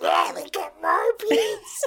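poorly done, high-pitched put-on cartoon duck voice. Retelling a joke's punchline in which Donald speaks, bad Donald Duck impression. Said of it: "the bad Donald Duck impressions".

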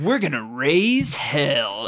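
deep, slow grown man's voice. Retelling a film scene, imitating the demon boy's adult man's voice. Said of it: "That's not how he sounds".

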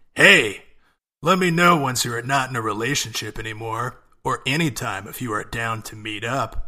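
loud, sultry, obnoxious smooth-talking bartender voice. Playing the guy in a two-person text-message bit, sultry player bartender voice. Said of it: "Sultry player type bartender voice".

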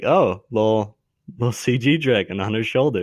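ordinary delivery

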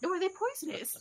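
sudden put-on British accent.

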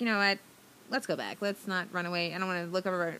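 normal talking voice

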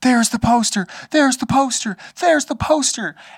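put-on thrilled child voice. Retelling a kid bouncing at a movie poster: imitating an excited kid. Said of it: "he was so excited".

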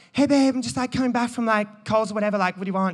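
loose, chatty, fast put-on American accent. Imagining a text from his wife in her voice; wife's voice, kind of american. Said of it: "That was kind of American".

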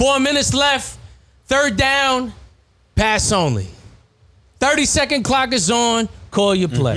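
resounding, booming announcer voice, pitched very high. Telling parents and coaches the game situation: resounding booming voice. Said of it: "have a very resounding, booming voice, and I say".

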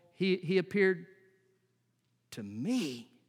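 heavy emphasis on the word me. Reading verse 8 aloud, with stress on the word me. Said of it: "There's actually an emphasis on the word me that you find in verse 8. We would read it like this".

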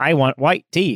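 robotic, machine-like synthesized text-to-speech voice. Retelling a YouTube video, voicing the patient who asks the dentist, in a robotic voice. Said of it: "it's that robotic voice".

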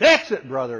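very loud, booming yell, pushed harder. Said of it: "started yelling louder".

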